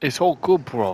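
bad, terrible, put-on fake British accent. Retelling a getaway, speaker adds a line in a terrible british accent. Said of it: "that's a terrible British accent".

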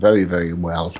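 eerie, unsettling, spooky delivery. Answering a cheerful greeting from another speaker, sounding creepy. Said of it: "She made that sound creepy".

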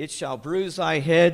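ordinary delivery

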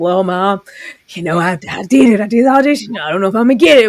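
completely sincere, dead-serious, earnest tone. Retelling what she said about her audition: imitating her serious tone. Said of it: "how serious she says".

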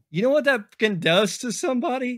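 very high voice, choked up, catching with emotion. Telling others about a dad who trusted the community with his kid: choked up with emotion. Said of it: "I'm getting a little fucking choked up".

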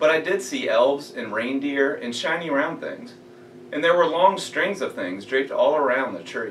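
ordinary delivery, nothing marked

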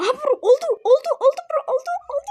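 very high, loud, excited cheering.

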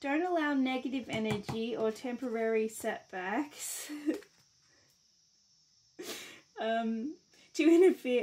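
loud, slow speech with laughter running through it. Reading a message aloud to someone, laughing while reading. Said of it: "I'm laughing".

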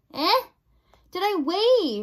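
very slow, loud, high, stretched-out, drawn-out shout. A princess repeats her own question, shouted. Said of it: "shouted the princess".

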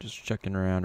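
plain

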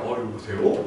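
mock low, soft put-on phone voice.

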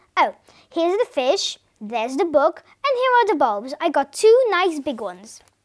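plain

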